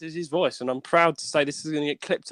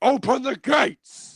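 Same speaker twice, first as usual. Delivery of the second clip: bad put-on monster voice, higher; 10 semitones higher than usual. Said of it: "I can't really do that well".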